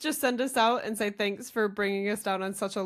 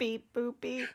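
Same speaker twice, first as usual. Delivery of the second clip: robot voice, quieter; 3 semitones higher, 5 dB quieter than usual. Podcast host signs off the episode, in a robot voice. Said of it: "That was my robot voice".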